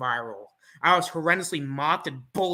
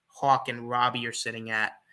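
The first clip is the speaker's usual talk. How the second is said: normal talking voice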